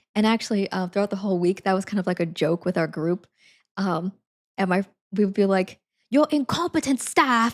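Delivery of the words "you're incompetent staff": deliberately awful, lousy put-on British accent. Recalling a running joke with the group, speaker does a terrible British Gordon Ramsay impression. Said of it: "doing a terrible British accent".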